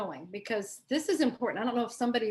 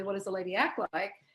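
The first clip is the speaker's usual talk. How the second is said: ordinary talk, nothing marked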